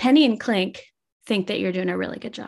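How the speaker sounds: mock flat deadpan delivery. Quoting your husband's turn to praise you, a retold deadpan remark. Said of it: "he just like deadpan looks at me and he's like".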